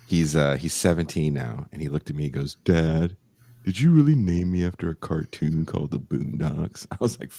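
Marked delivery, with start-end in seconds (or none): 2.6-6.9 put-on heavy, deep, low teenage bass voice. A dad retells his seventeen-year-old son questioning his name, imitating son's deep voice. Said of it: "He's a very deep voice".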